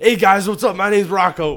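high, loud, badly done Boston accent. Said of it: "that's not a great accent".

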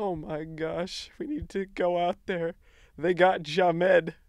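play-acted tearful, crying news anchor voice. Acting out a dolled-up late news anchor reading the news: imitating a crying news anchor. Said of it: "and she's crying".

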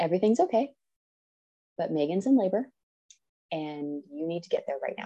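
steady, composed, very calm, soft delivery. Retelling how a woman told the speaker's husband at the truck window, very calmly. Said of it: "just very calmly".

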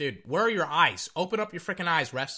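ordinary talk, nothing marked

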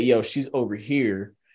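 ordinary delivery

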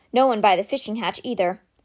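ordinary delivery, nothing marked

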